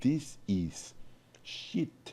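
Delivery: put-on thick Hungarian accent. Recalling a harsh critique of his experimental drawings, in a thick Hungarian accent. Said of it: "he's Hungarian, so he had a thick accent".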